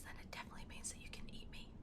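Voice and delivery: speaking in a whisper. Checking that listeners can hear, whispering. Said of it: "If you can hear me whispering like this".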